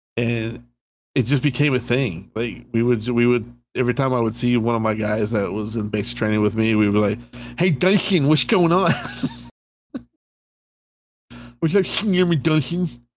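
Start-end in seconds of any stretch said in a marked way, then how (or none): 7.6-12.9 high, put-on cartoon-cat drill-instructor voice. Greeting a base training buddy as a running joke, Sylvester the Cat drill instructor. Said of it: "It sounded like Sylvester the Cat. But drill instructor".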